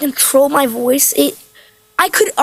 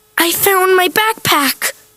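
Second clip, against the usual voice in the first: high, frightened, fearful delivery; 5 semitones higher than usual. Acting exercise saying one line in different ways, now scared. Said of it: "And scared?".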